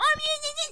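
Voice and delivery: put-on very high yelling little urchin kid voice.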